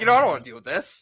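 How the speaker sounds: put-on sassy voice full of attitude. Joking about being sassy with the others: putting on sass. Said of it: "now I'm being sassy. I'm like".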